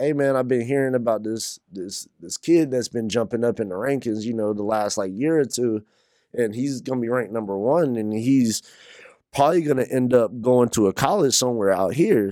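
ordinary talk

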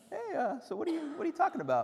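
sarcastic, high-pitched, swooping, swinging intonation. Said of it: "That's like sarcastic Jesus".

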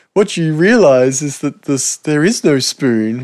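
put-on kid's accent. Quoting the spoon bender kid from the film, imitating the spoon bender kid's accent. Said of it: "he's got the greatest accent as well".

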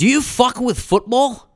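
put-on Scottish accent, loud and high. Retelling what a scottish man asked another man, in a put-on scottish accent. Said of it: "He looks at him in his Scottish way".

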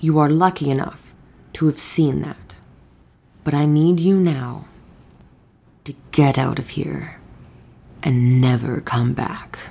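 quiet, low, intense voice. Speaking in character, leaning down into a woman's ear: intense, quiet voice. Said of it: "in a more intense, quiet fashion".

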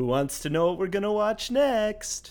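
goofy, very high, dopey, dumb-sounding voice. Host asking the others what they'll watch next, really dumb voice. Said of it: "I asked it in a really dumb voice".

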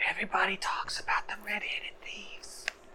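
breathy, hushed whisper, very quiet. In a role-play scene, one character speaks to the others, whispering. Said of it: "Why are you whispering?".

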